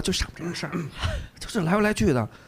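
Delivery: soft, hushed, under-the-breath voice. Retelling what other parents said, imitating someone speaking quietly. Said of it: "就这小声的说".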